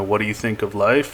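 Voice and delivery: ordinary talk, nothing marked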